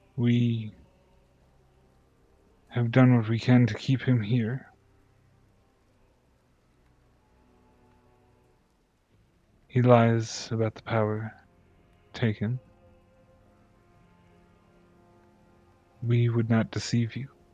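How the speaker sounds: serene being voice. A game master voices an entity speaking into a player's mind: calm Seeker voice. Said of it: "gives you a sense of calm in your mind".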